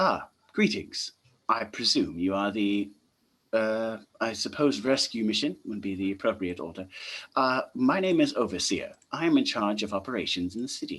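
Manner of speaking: polite, well-mannered, courteous voice. Voicing the Overseer greeting a rescue mission over the comms: polite sounding voice. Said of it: "a polite sounding voice comes across the comms".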